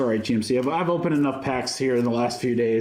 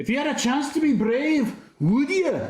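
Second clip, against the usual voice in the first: pretty bad, high, put-on Scottish accent; 14 semitones higher than usual. Naming Disney stickers, quoting Merida's line in a bad Merida accent. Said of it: "It's a pretty bad accent".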